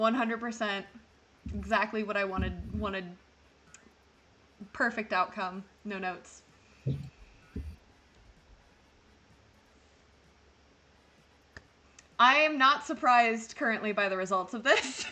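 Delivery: thoroughly unimpressed, unamused tone. Reacting to the results of a vote: unamused. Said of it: "Don't sound so unamused".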